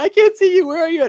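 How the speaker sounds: very high, loud shouted calling out. Retelling a funny wrestling segment, imitating someone yelling. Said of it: "he's just yelling".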